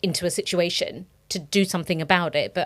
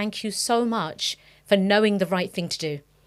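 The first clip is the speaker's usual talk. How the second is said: ordinary talk, nothing marked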